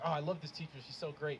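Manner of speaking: ordinary talk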